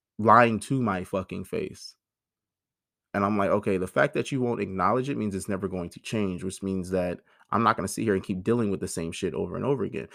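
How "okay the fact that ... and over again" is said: usual speaking voice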